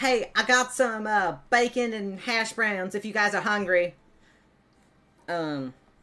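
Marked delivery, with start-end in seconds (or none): 0.0-3.9 loud, high call carrying far. Voicing a grandmother announcing bacon and hash browns: shouting into the grove. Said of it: "you do hear her shout kind of into the grove".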